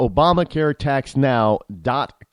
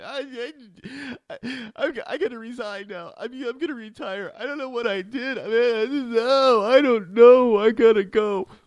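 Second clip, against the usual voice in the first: put-on slow, high, tearful, halting blubbering; 10 semitones higher than usual. Imitating a politician quitting after the Pope leaves: imitating Boehner crying. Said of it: "all teary-eyed crying".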